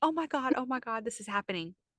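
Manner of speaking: put-on frantic panic, overwhelmed and alarmed, freaking out. Retelling giving birth, told she is at an eight: retelling her own panic. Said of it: "I'm freaking out".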